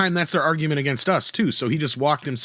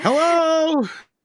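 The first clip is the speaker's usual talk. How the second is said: put-on yell, higher; 13 semitones higher, 3 dB louder than usual. Acting out a joke scene where a blind man yells, lost: acting out a blind man yelling. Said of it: "while the blind guy yells".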